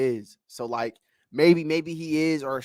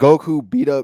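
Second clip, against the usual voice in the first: voice cracks, much louder and slower; 8 dB louder than usual. Debating another speaker about Goku's fights, the voice cracks. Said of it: "Ooh, voice crack".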